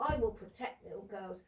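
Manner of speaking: put-on calm tone. Confronting someone by acting out how they said it without anger, imitating someone very calm. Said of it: "very calmly. ... There's no anger in your voice".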